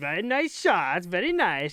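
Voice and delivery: put-on slow, sing-song, drawled Eastern European accent. A player recalls what he says to goalies mid-game, in a Borat voice. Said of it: "I probably be just like Borat voice".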